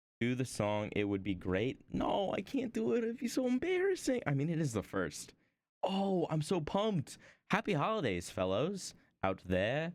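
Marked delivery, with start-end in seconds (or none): 7.5-9.9 awkwardly cheesy, corny, cringey hype delivery. Wishing the viewers happy holidays: cringey cheesy delivery. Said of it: "I was so cringe the way I said that".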